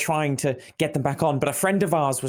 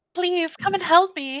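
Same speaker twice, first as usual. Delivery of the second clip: put-on woman's voice, screaming and yelling. A game master voices someone trapped underneath, calling out: screaming in a woman's voice. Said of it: "a woman's voice uh screams it".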